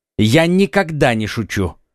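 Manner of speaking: plain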